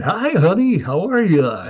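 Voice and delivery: radio announcer voice, swooping and slow. Joking about radio announcers talking at home: mock radio announcer voice. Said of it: "guys who was on the radio and then went home".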